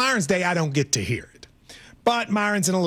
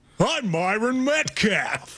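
put-on radio host announcer voice, pitched higher; 4 semitones higher than usual. Imitating the co-host's different radio host voice. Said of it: "Don't do that".

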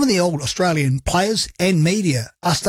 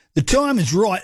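horrible put-on Australian accent; 3 semitones higher than usual. Quoting Dean Ritchie's claim about rugby league, in a bad Australian accent. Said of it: "A horrible Australian accent".

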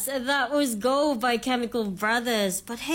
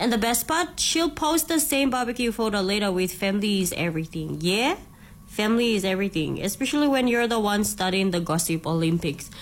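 plain

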